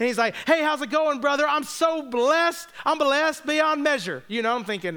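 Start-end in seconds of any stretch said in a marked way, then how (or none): 0.5-4.2 high, overly cheerful, gushing voice. Retelling how a man named Lindsay greeted the speaker, imitating Lindsay's cheerful churchy talk. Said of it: "the way he talked".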